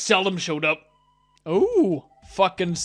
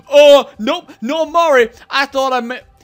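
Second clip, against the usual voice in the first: put-on very loud, high, sarcastic, sassy tone; 6 semitones higher, 8 dB louder than usual. Imitating a game character who denies meeting Mari: imitating a sassy NPC. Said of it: "he's, like, so sassy".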